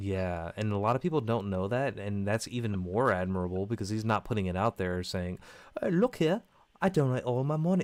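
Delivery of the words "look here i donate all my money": failed put-on English accent, pitched up. Praising a man who quietly donates to rehab, voicing him: bad english accent. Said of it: "I can't do an English accent".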